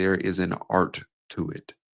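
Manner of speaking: slowed, unhurried, deliberate, each word given room. Speaker demonstrating a speaking technique to listeners, slowed down. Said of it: "Just like I did there, I just slowed down".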